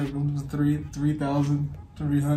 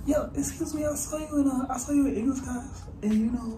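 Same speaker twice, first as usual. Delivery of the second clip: put-on much higher voice of a seventh grade boy. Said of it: "Okay, now start".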